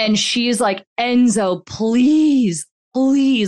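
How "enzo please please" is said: panicked, high, raised pleading cry. Retelling a best friend begging Enzo in a panic: imitating Desi pleading. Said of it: "just hearing the pleading in her voice".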